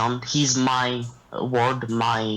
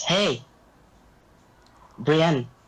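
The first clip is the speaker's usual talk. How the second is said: calling out loudly; 5 semitones higher than usual. Player's character waving a woman over, shouting a greeting. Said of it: "waves her over and shouts".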